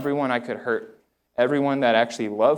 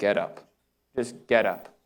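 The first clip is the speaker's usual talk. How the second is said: acted, stern, curt, swift, direct, repeated delivery; 3 semitones lower, 3 dB quieter than usual. Retelling a voice that told them to get up: imitating a stern, direct, swift voice. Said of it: "It was a stern, direct, swift voice that was repetitive".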